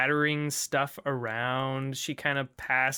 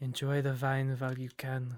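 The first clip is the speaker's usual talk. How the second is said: hushed, soft half-whispered aside; 4 dB quieter than usual. A woman setting down drinks speaks off to the side, half-whispered aside. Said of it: "she kind of whispers off to the side".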